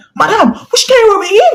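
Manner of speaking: play-acted, very high, furious scream. Retelling screaming at a woman she addressed as Madam: retelling own screaming. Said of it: "I started screaming like".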